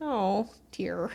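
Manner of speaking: mock indifferent, unbothered tone. Retelling how a character reacts to bad news: imitating an unbothered reaction. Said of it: "He's not that upset, though".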